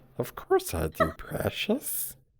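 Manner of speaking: hushed, breathy, weird creature voice. Retelling how he imagined Gollum happening in real time, in a Gollum voice. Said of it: "so you have like a weird voice?".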